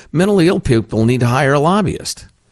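put-on bitterly humorous, dry, sardonic sarcasm. Discussing mental health care failings, the speaker quotes his own remark: retelling a dryly sarcastic comment. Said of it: "I've made the dryly sarcastic, bitterly humorous comment".

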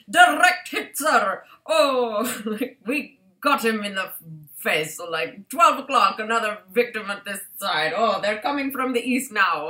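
put-on, strange English-Scottish accent, stretched "oh". Describing boys at their shenanigans, in their strange English/Scottish accent. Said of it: "they put on these strange English/Scottish accents".

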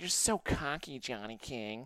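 slow, scornful, contemptuous tone, acted. Recalling how she called him cocky, imitating her disdain. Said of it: "she looked at me with such disdain".

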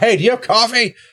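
very high-pitched yelled call. Opening the inn door and calling to the man inside: yelling through a door. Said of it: "Are you yelling at him?".

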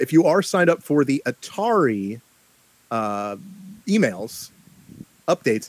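slow, deliberately spelled-out, halting phrasing with breaks. A host explains an atari email update to listeners, speaking slowly. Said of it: "I'm gonna say this slowly so you understand it".

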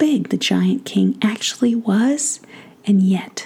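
plain reading voice

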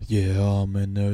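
slow, flat, emotionless, unenthused deadpan drone. Imitating a TV presenter who shows no enthusiasm on the show: imitating Benji with no emotion. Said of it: "have a bit of fucking emotion".

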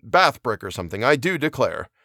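ordinary delivery, nothing marked

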